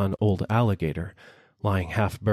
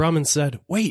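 plain reading voice

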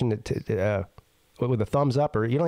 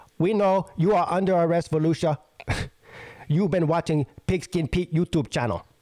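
put-on Chinese accent in English throughout; 4 semitones higher than usual. Speaker acts out officers making an arrest in an imagined scene; Chinese accent. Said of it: "That's my Chinese accent".

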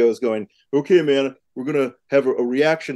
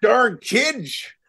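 put-on grumpy old man voice, pitched very high; 9 semitones higher than usual. Joking about being an old man: grumpy old man voice. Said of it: "I'm an old man now".

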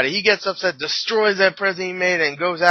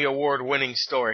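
plain

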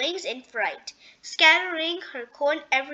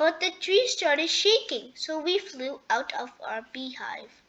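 ordinary delivery

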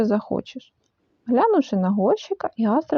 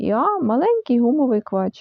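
plain reading voice

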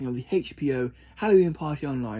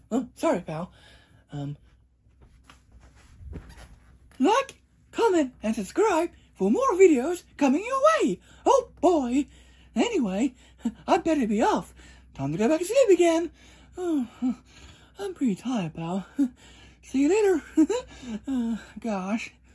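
very high cartoon voice, pitch swooping around; 12 semitones higher than usual. Bringing a Mickey mascot head to life for viewers, in a Mickey Mouse voice. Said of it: "I pretend he's alive because I bring him to life".

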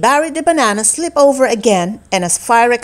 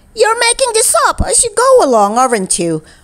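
very high, irritated, exasperated complaining tone; 10 semitones higher than usual. [name] speaks to Keith during the word game, annoyed. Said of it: "feeling very annoyed".

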